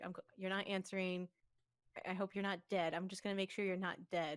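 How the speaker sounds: usual speaking voice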